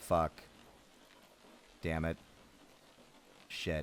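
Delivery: acted, emotionless deadpan monotone, half-whispered. Describing a character grabbed and dragged into water, Warren flat monotone. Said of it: "that's the level of, like, complete monotone Warren has".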